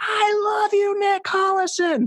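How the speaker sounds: put-on, very high, all-out full-volume scream. Retelling trying to get a man from Kansas to notice him, screaming as loud as possible. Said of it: "as loud as I could, I just screamed".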